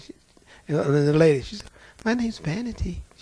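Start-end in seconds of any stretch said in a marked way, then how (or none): 2.0-3.0 put-on demure, sugary-sweet little voice. Retelling what a demon said through a woman: imitating a sweet, demure voice. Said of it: "She sounded just as sweet and demure".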